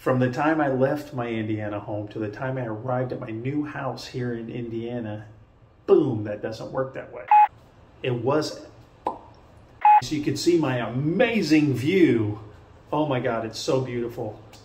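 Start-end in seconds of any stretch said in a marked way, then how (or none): 9.1-14.4 sarcastic tone, meaning the opposite. Speaker describes the view from a new house; sarcastic.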